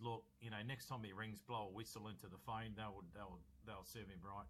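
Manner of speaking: ordinary talk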